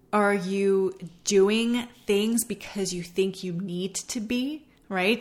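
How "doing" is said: heavy stress on the word "doing". Asking listeners about how they use self-care time; stress on 'doing'. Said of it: "See how I put the emphasis on doing?".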